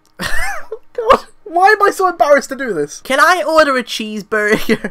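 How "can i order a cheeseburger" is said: clumsy, bad put-on American accent. A British speaker ordering a cheeseburger in a bad American accent. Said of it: "So bad".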